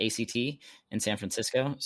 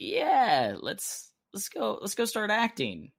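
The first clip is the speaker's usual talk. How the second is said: put-on very high, swooping, sarcastic enthusiastic cheer; 11 semitones higher than usual. Retelling own past words on audition day: imitating own sarcastic remark.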